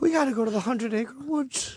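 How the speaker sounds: very high, cute cartoon voice. Reading a test line for a character as asked: Winnie the Pooh voice. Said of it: "Say it's".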